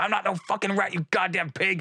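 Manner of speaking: high, screaming, defiant street-thug yell. Retelling a scene played as a street thug being arrested: imitating a yelling street thug. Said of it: "yelling and screaming".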